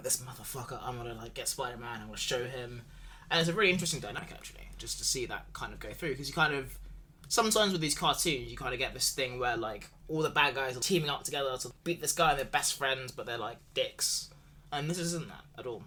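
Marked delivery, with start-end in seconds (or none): 0.0-2.8 mock angry grumbling, quieter. Describing a cartoon villain's reaction to Kingpin's order, in mock angry grumbling. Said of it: "you can see him like grumbling".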